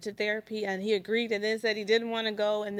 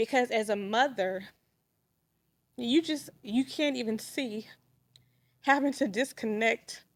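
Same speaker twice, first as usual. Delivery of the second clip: tearful speech, crying while talking. Telling others what a therapist said about the kids: crying while talking. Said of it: "I'm sorry for crying".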